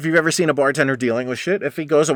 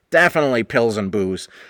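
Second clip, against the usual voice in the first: normal talking voice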